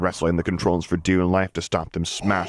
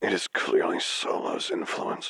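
quieter, labored rasping voice; 6 dB quieter than usual. Narrator reading Vader's reply in a story, in a frail rasp. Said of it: "The voice, a frail rasp, the ruin of the pleasant tenor in the recording the Solo twins had shown him, labored to be heard at all".

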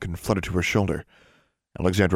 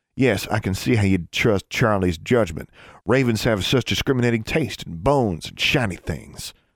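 plain reading voice

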